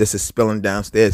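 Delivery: ordinary talk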